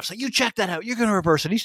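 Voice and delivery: put-on, acted-out yelling. Acting out a man yelling at the referees after a foul, imitating someone shouting. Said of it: "He's yelled at the refs".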